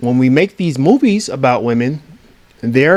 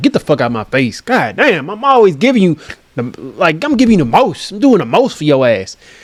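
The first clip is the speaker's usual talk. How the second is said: irritated, annoyed, scolding tell-off tone; 3 semitones higher than usual. Retelling how people who give crumbs react: imitating someone telling you off.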